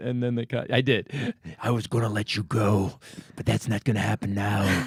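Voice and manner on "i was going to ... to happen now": put-on superhero-style whisper. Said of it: "You became Batman".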